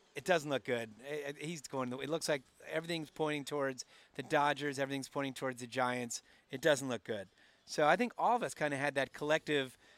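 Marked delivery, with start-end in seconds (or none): none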